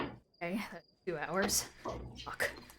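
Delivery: very hushed, very quiet, slow grumbling mutter. Game master voices a man who pockets his sundial and taps his foot, muttering under breath. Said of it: "he taps his foot and he mutters".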